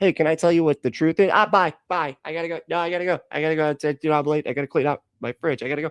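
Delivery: sarcastic mock delivery. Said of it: "And then, like".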